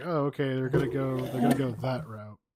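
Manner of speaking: ordinary talk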